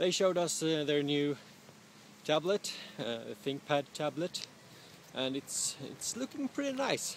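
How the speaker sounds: breathless, out-of-breath talk, puffing between words. Climbing something steep, the speaker keeps describing a product event: out of breath. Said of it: "I'm getting out of breath".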